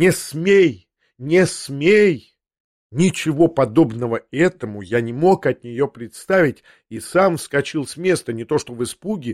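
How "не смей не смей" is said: very slow, menacing, threatening. Narrating a mother who stands and shakes her finger at the narrator; shouted, threatening. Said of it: "крикнула".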